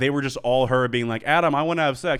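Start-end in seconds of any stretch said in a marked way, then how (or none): none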